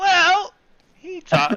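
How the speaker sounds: voice cracking and breaking, very high. After a constitution save, the game master shows the character's line: voice cracking. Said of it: "your voice is like".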